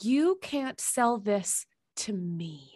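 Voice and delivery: acted-out menacing, mock-menacing delivery. Recounting what the speaker told a bookstore manager, retelling a menacing line. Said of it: "I said it with so much menace".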